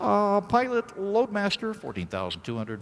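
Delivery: very high, timorous, intimidated little voice. A pilot retells his new loadmaster calling on the headset, imitating a timid, intimidated voice. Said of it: "this timorous little voice, just so intimidated".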